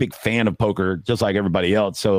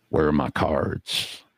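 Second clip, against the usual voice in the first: soft, hushed whisper, close and intimate; 6 semitones lower, 5 dB quieter than usual. Retelling what a man whispered in the speaker's ear on the flop: retelling a whisper. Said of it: "he whispers in my ear on the flop".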